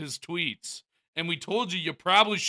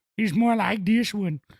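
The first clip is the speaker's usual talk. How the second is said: put-on deep bass voice; 3 semitones higher than usual. Comparing two voices from a video, doing Carl Weezer low bass voice. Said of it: "Carl's more lower and more bass in his voice".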